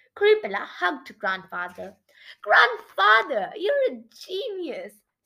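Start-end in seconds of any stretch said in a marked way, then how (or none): 2.4-4.9 sudden high, loud, squeaky burst of pride. Reading a granddaughter hugging her grandfather: squeaking proudly. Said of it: "she squeaked proudly".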